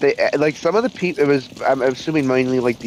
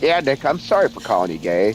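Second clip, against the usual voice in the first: put-on flat delivery, much lower pitch; 3 semitones lower than usual. Retelling a moment from a TV interview clip, imitating Tucker Carlson's deadpan. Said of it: "just deadpan goes".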